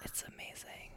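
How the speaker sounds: very soft, faint, voiceless whisper.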